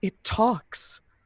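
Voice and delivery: utterly terrified, high-pitched delivery. Retelling a man's reaction while telling a story, acting out terrified speech. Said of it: "most terrified look on his face says".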